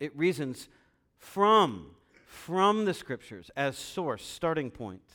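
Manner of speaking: strong stress placed on the word from.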